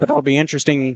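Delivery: voice cracking and breaking. Speaker comments on a Titans game, voice cracking. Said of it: "Voice crack alert".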